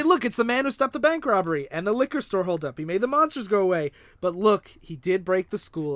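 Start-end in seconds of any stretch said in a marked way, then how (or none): none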